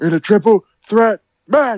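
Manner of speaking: very high ring announcer voice. Asked by the other speaker to do the announcement: ring announcer voice. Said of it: "Do the announcement".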